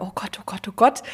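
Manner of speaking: anxious, timid, fearful, cautious fretting. Describing the voices in her head, doing the cautious one that is always afraid: timid fearful inner voice. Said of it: "Das ist die ganz vorsichtige, die immer Angst hat".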